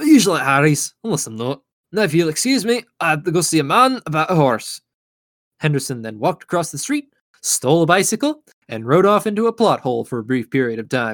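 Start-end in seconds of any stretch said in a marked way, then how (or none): 0.0-4.8 put-on Scottish accent, in character. Voicing Henderson taking leave of another character: Henderson's Scottish accent. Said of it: "Scottish accent is wearing on my vocal cords".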